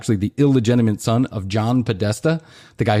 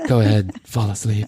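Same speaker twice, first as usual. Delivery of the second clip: put-on, mock-sexy, sultry voice. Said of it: "she says sexy wor-, sexy words to me".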